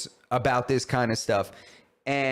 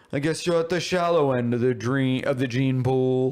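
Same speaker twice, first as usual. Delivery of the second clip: put-on pompous villain voice. Mocking a podcast guest who talked like Scar: imitating Douglas Murray like Scar. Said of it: "You remember how Scar was like that".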